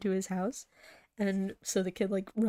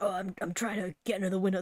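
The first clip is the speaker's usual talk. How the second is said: deep, weird, scratchy puppet voice, faster. Retelling a scene where a Muppet tries to crawl into a window, deep scratchy voice. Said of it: "They all have like weird, deep, scratchy man voices".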